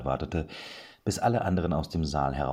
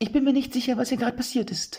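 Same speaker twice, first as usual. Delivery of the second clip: very high, squeaky falsetto head voice; 4 dB louder than usual. A narrator reads a man's line while two listeners hold back laughter, in a high falsetto. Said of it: "sagte er mit einer hohen Fistelstimme".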